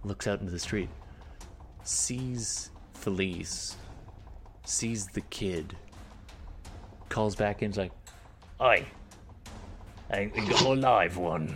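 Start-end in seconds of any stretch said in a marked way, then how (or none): 8.6-11.5 put-on devil creature voice, slow and drawn out. Narrating the game, voicing the creature that spots Felice and the kid, in a bearded devil voice. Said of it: "Didn't expect that voice".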